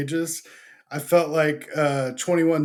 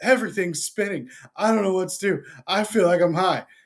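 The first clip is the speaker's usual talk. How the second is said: acted, giggly, laughing hard, breaking into laughter mid-line; 3 semitones higher than usual. Retelling his wife's words as she felt high: imitating someone laughing hard while talking. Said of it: "She's laughing so hard".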